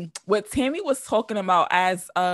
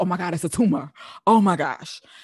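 mock panicking, slower. Speaker recalling their instant thought as a hypochondriac, retelling their own panic. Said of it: "So I'm panicking".

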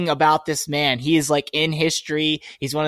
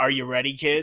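put-on pirate voice, quieter; 6 dB quieter than usual. Picturing a mascot with his leg on a barrel: Captain Morgan voice. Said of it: "I'm just imagining Captain Morgan with his".

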